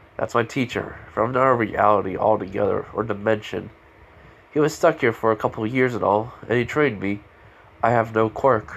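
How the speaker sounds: plain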